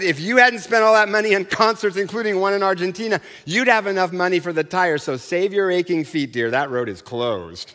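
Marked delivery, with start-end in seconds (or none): none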